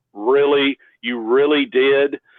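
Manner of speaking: heavy sarcasm with put-on disbelief. Speaker retelling how a man answered him, imitating a sarcastic reply. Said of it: "Just real sarcastically".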